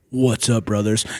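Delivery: deep, very low-pitched voice. Retelling hearing Julius Maddox greet them, in a deep Julius Maddox voice. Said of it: "we just hear this deep ass like".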